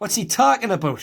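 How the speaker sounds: Newcastle Geordie accent, pitched high. Speaker demonstrating how a video title sounds, in a Geordie accent. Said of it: "You could say that in a Geordie accent".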